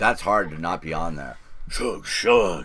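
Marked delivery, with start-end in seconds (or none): 1.7-2.7 accent from Mongolia. Going over songs on the list, saying a title in a Mongolian accent. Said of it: "my best Mongolian accent".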